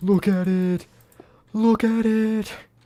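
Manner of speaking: very high scream, slow and drawn out. Repeating an iconic SpongeBob line: Patrick screaming. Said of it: "Just Patrick screaming".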